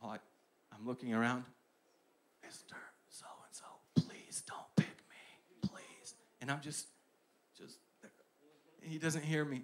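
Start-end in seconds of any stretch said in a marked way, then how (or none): 2.4-6.2 slow, pleading whisper under the breath. Retelling begging the history teacher during class reading: retelling a whisper. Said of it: "And I was whispering".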